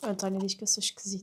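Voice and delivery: soft, quick, quiet whisper. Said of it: "estou a falar mais baixinho".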